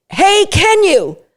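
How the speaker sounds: excited, high, excitable hey. Explaining how to ask someone to come get their dog, in an excitable tone. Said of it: "say it in an excitable tone".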